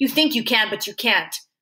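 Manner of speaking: usual speaking voice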